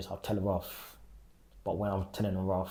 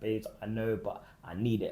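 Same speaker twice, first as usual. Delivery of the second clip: put-on crying, tearful pleading tone; 2 semitones higher than usual. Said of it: "Then she just started crying".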